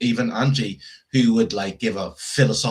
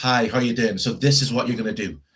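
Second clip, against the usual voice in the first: mock firm, assertive tone. Contrasting two managers' ways of talking: imitating an assertive manager.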